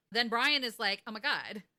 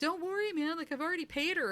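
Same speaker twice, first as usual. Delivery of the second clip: put-on, shouted, high-pitched yell; 8 semitones higher than usual. Retelling a movie scene where a character taunts a bully: imitating someone yelling.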